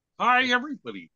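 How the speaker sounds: squeaky, very high-pitched puppet voice. Greeting everybody while the others call out to Kermit: Kermit the Frog voice. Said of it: "Hey, Kermit".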